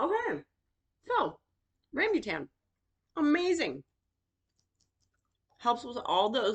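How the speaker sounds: speaking with food in mouth. Eating a rambutan, speaker keeps describing it while talking with mouth full. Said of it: "Apologies for talking with food in my mouth".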